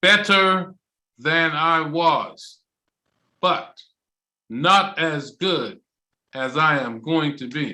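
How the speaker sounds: very slow, deliberate, drawn out word by word. Speaker demonstrates his answer to 'how are you', said very slowly. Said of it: "I'm going to say it really slow for you".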